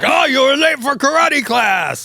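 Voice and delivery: put-on Japanese accent. Showing on request the altered voice used in old prank calls: put-on fake Japanese accent. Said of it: "do an example of it".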